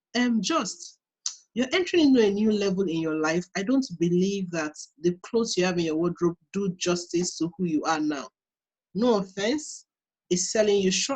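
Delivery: gentle, calm, soft, even, unraised voice. Retelling what a girl said about the wardrobe: imitating her calm talk. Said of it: "This is how she was talking".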